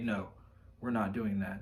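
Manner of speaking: mock stoic manly voice. Describing how the hero voice would answer the coward voice: mock-stoic manly voice. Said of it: "manly, masculinely, stoically say".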